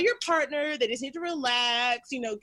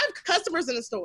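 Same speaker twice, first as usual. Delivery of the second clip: normal talking voice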